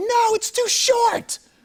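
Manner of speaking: very high, stretched-out, drawn-out wailing scream. Retelling a wife in a bathrobe chasing outside: imitating wife screaming. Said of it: "And she starts screaming".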